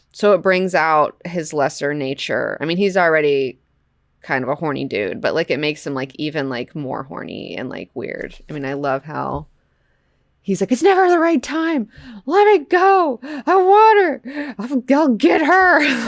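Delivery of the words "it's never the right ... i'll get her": put-on very high, worked-up, drawn-out, angry pleading voice. Acting out a comic character's lines while describing the panel: imitating an angry character. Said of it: "He's so mad".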